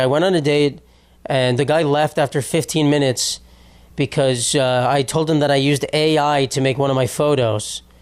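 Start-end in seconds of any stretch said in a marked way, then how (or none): none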